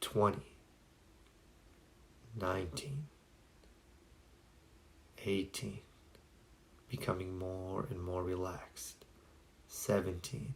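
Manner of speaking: hushed, slow, steady, rhythmic whisper. Guiding a relaxation exercise, demonstrating the countdown in a slow rhythmic voice. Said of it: "in a slow rhythmic voice such as this".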